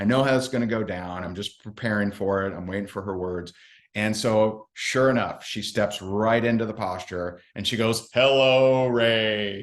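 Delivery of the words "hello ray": play-acted powerful, resounding, booming voice, drawn out. Retelling how a woman greeted the speaker, imitating her booming voice. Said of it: "this booming, you know, powerful voice".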